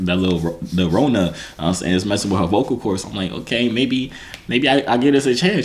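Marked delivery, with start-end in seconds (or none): none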